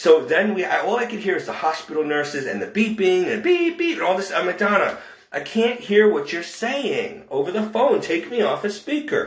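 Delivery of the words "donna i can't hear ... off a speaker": mock calling-out tone, a mild half-yell. Retelling calling across the room into a speakerphone: retelling own yelling. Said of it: "I'm across the room trying to yell".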